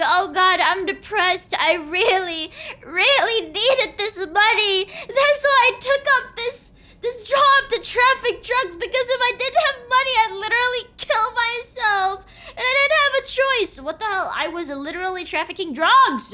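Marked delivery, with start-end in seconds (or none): 0.0-13.8 fake tearful, weepy begging, put-on crying. Mocking a drug trafficker crying to the court: mock crying to the court. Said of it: "freaking crying to the court".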